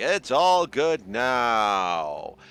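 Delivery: deep radio announcer voice, very slow and stretched. Reassuring listeners after a cold, the speaker slips into an announcer voice. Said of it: "I'm just doing like an announcer voice".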